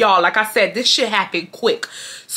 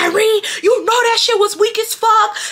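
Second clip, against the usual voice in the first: very high, shrill, screaming rant; 12 semitones higher than usual. Retelling how a schoolmate yelled at the speaker: imitating someone screaming fast. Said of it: "she's screaming, like, she's, she going a mile a minute".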